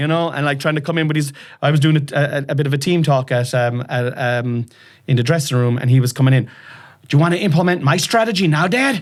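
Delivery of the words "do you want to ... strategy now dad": put-on American accent, pitched much higher. Father retelling his son interrupting a dressing-room team talk, son's American accent. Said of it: "coming along with his American accent".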